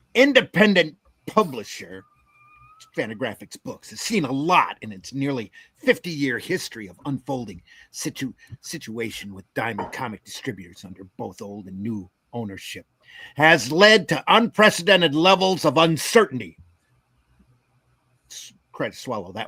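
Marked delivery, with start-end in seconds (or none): 0.1-16.5 angry voice, read-aloud style. Reading a news article aloud after being asked for the angry voice. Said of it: "do we want the angry voice?".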